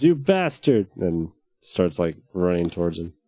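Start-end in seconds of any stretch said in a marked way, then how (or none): 0.0-0.9 furious, high, angry shouting. A character draws his sword and charges a foe: yelling. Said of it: "he pulls his sword and he yells".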